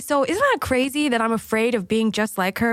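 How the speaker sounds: ordinary delivery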